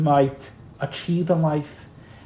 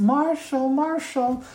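much higher, squeaky, little pipsqueak voice; 9 semitones higher than usual. Retelling how a 22-year-old nurse called his grandfather's name, in a pipsqueak voice. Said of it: "being called in a pipsqueak voice".

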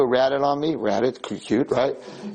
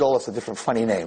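plain

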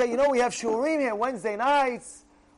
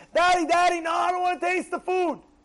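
put-on young child's high-pitched scream; 6 semitones higher than usual. Acting out a child refusing food: imitating a kid screaming. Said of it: "he screams out".

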